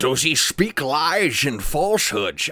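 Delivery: bad Scottish accent, loud and high. Signing off episode eleven to the folks, doing a bad Sean Connery impression. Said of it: "It's like the shittiest Sean Connery".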